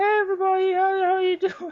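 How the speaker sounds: very high, squeaky online gamer voice. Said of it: "High pitch".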